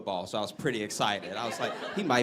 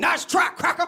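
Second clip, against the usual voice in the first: shrill, very high, very loud, dismissive tone; 8 dB louder than usual. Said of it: "And he was like".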